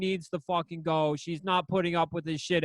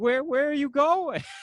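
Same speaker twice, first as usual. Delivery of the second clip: put-on tearful weeping, high and pleading; 8 semitones higher, 4 dB louder than usual. Retelling how a woman followed a man out, imitating someone crying. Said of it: "crying like".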